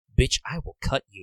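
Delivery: put-on sassy woman's voice. Retelling a game scene, imitating sassy Madam M. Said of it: "the Madame is very sassy".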